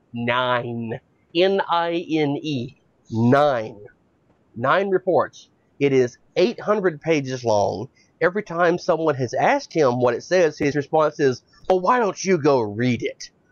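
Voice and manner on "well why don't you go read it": put-on childish three-year-old voice. Imitating the reply given when asked about the report: imitating Trey Gowdy like a three-year-old. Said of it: "Like he's a giant fucking three-year-old".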